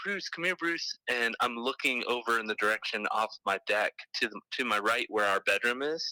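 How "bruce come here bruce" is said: play-acted, high-pitched calling-out voice. Retelling calling for their dog from the deck: calling for a dog. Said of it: "I started calling for my dog".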